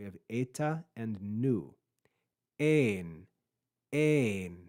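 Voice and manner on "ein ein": pitch rising then falling on ein. Showing learners how to say a Greek word: pitch rising then falling on Ein. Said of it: "You can hear my pitch rise and fall".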